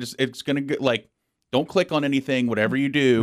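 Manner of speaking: ordinary talk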